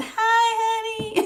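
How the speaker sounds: very high, soft, sweetened little whine. Describing how a woman might soften her voice, demonstrating a softened, whiny voice. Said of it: "She gonna try to soften her voice".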